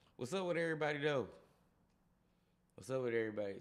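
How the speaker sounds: breathless, puffing, out-of-breath voice. Greeting everybody tuning in after running to the door and back: out of breath. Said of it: "Sorry I sound like I out of breath".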